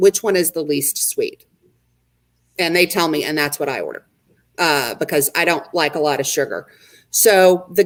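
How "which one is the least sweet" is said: plain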